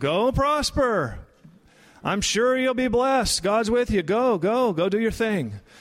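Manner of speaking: high, sarcastic, falsely encouraging, condescending tone, put-on. Acting out how the prophet might have answered the king: acting out sarcastic Micaiah. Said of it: "You're being sarcastic".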